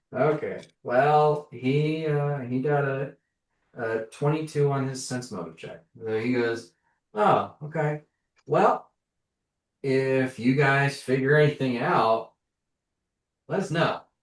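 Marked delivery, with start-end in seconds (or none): 7.1-14.0 voice dripping with smarm. Voicing a character who knows the group is hiding something: smarmy. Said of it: "you can hear the smarm in his voice".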